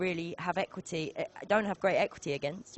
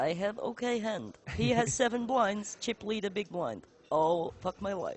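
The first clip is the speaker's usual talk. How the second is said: fake Russian-Bulgarian accent, best attempt; 3 semitones higher than usual. Poker player retells an opponent's thought process, in a put-on Russian Bulgarian accent. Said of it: "my best kind of Russian Bulgarian accent".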